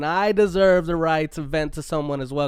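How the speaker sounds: normal talking voice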